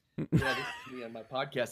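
very quiet, faint, distant voice backed off the microphone. Speaker demonstrating microphone technique as if on a podcast, far from the microphone. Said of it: "if I all of a sudden move back".

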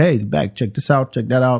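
ordinary delivery

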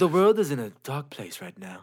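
put-on British nature-documentary narration voice. Describing cartoon videos on YouTube to a friend, in a put-on British narrator voice. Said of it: "with like the European guy's voice or the British voice".

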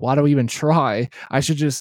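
normal talking voice

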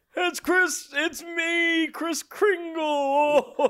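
voice sounding a bit sick, under the weather. Answering a call as Chris Kringle: sick-sounding Chris Kringle voice. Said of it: "You sound a little sick".

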